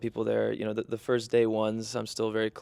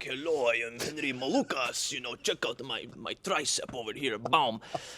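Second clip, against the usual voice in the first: put-on thick, heavy Eastern European accent, macho; 2 semitones higher than usual. Describing their dad, the speaker imitates him: Henry Malukas, heavy Eastern European accent. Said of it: "with the the heavy Eastern European accent".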